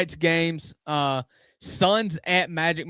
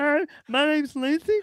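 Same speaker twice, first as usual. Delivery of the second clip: very high, squeaky mouse voice; 10 semitones higher than usual. Joking about Lindsey Graham showing up in a feed: Lindsey Graham as Mickey Mouse. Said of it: "So he sounds like Mickey Mouse".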